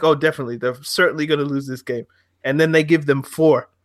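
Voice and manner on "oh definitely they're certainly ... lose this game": ordinary delivery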